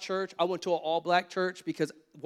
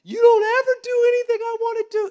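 very high-pitched, very loud hysterical crying fit; 9 dB louder than usual. Retelling what a woman said during an argument, imitating hysterical crying. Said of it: "like hysterically crying".

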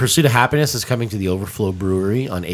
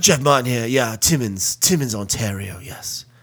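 slow, drawling fake British accent. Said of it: "with your fake British accent".

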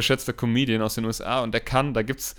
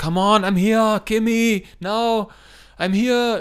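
loud, slow, drawn-out, very high shout; 9 semitones higher, 5 dB louder than usual. Retelling a legendary scene where he lies there and shouts: imitating Arnold Schwarzenegger shouting. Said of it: "wo er da liegt und dann ruft".

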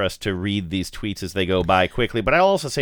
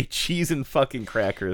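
ordinary talk

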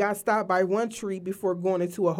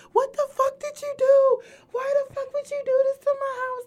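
acted, very high-pitched, furious, angry yelling; 4 dB louder than usual. Retelling how a lady shouted at them about her house: imitating a lady yelling. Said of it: "The lady sitting there yelling at us".

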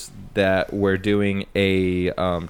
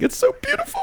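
high, sobbing crying voice, way up high. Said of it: "he starts making a crying voice".

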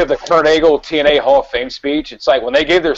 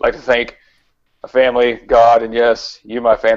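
uncaring, low, flat, droning monotone; 4 semitones lower than usual. Imitating a Hall of Fame acceptance speech: monotone Kurt Angle impression. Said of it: "Kurt Angle speech when he's just like".

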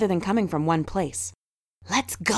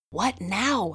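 strained, tense whisper, quieter; 4 dB quieter than usual. Henry, in a quiet aisle between the stacks, asks the others: strained whisper. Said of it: "asked Henry in a strained whisper".

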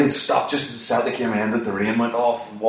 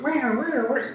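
high, panicky whimper.

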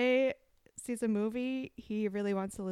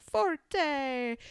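put-on, fake Italian accent with voice pitched up; 5 semitones higher, 4 dB louder than usual. Imitating how he says forte while narrating songs: fake Italian accent. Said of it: "like a fake Italian accent too".

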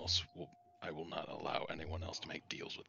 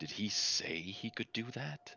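acted whisper, higher pitch; 5 semitones higher, 3 dB louder than usual. Leaning in to ask another character a question: whispering in character. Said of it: "I'd lean into you and I whisper".

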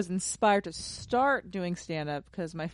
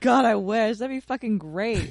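angst-filled delivery, with real angst; 4 dB louder than usual. A comedian asked about doing movies or tv, answering with angst. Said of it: "You said that with such angst".

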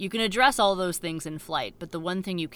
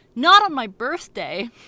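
very loud, high shout at full volume; 6 semitones higher, 11 dB louder than usual. Retelling a tense standoff where a crew member suddenly cries out: retelling a very loud shout. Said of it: "in the loudest voice".

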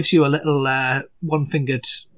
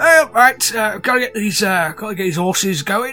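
put-on speaking with a cockney accent. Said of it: "that went a bit cockney there".

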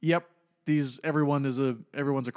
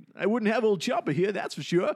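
put-on old-timer voice, higher; 8 semitones higher than usual. Quoting an episode line to the other speakers: Walter Brennan impression. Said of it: "that's a Walter Brennan impression".

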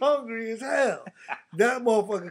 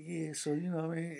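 soft, low-key, smooth-talking voice. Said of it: "you be like this".

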